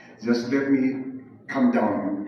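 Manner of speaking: deliberately slowed, calming pace.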